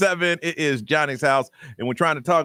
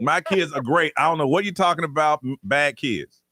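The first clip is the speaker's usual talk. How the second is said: ordinary talk, nothing marked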